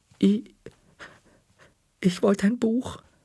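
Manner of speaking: shaky, quivering, trembling, very high voice. Narrator admitting part of the truth to her, in a trembling voice. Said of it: "sagte ich mit zittriger Stimme".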